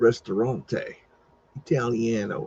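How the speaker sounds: terrible, exaggerated, put-on Italian accent. Reading a restaurant sign aloud among demolished buildings, terrible italian accent. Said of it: "That was a terrible Italian accent".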